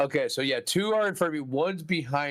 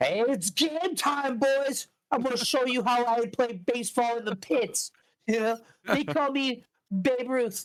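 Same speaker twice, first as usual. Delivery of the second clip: put-on, high, squeaky guy voice; 9 semitones higher than usual. Describing taking out a giant bat and addressing the boys, squeaky guy voice. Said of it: "I like the squeaky guy".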